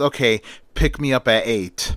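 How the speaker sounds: plain reading voice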